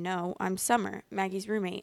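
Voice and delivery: plain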